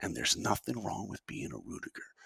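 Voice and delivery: whispered, barely above breath, very quiet. Retelling a movie scene, speaker quotes a father's line to his son: retelling a whisper. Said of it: "And then he whispers".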